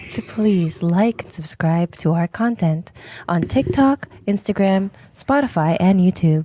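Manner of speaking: sweet, patient, coaxing, very gentle and calm voice. A host asks listeners to like and subscribe, in the most gentle voice. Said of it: "in my most gentlest voice".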